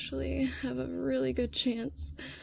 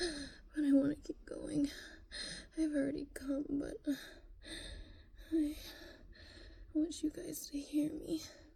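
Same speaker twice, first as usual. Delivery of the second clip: out of breath, worn out, quieter; 2 semitones higher, 6 dB quieter than usual. Speaker talking to listeners and wanting to keep going, out of breath and tired. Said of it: "I'm already so out of breath and so tired".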